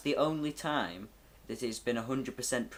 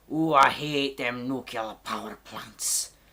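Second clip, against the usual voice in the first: loud put-on accent sliding into pirate talk; 7 dB louder than usual. Playing someone against nuclear power, in a pirate-like put-on accent. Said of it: "I kind of sound like a pirate".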